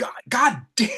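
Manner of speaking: high, frustrated, exasperated tone. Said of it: "Zach just went".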